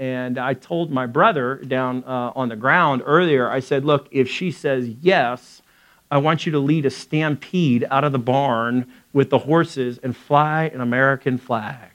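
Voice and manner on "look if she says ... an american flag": usual speaking voice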